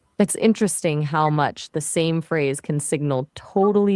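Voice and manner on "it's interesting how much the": plain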